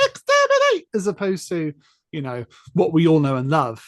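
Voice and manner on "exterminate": shrill, very high, loud screeching cry. Describing how the Daleks sound in the TV movie: imitating high-pitched Dalek voice. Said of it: "why they sound so sort of high-pitched".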